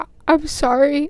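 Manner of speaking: play-acted crying, tearful, sorry voice. Retelling breaking down during a driving test: retelling crying. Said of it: "And I just start crying".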